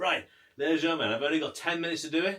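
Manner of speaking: loud shouting.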